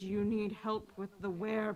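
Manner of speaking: awkwardly sneaky whisper. Player's character awkwardly tries to be sneaky with a shopkeeper, sneaky whisper.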